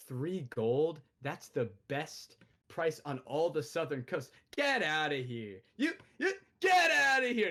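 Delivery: disgusted, dismissive, with swooping pitch. A game master voices the merchant refusing a haggle after a failed check, disgusted. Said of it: "He looks disgusted at you".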